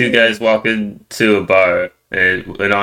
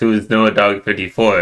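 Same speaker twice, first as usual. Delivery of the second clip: ordinary delivery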